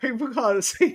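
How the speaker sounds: loud, high words spoken through laughter. Explaining laughter to viewers who can't see the camera: laughing while talking. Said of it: "I'm laughing, right?".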